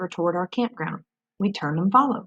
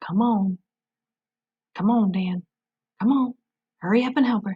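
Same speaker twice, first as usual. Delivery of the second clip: hushed whisper; 2 semitones higher than usual. Narrating a hunting story, the narrator speaks to dan in a whisper. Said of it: "in a whisper I said".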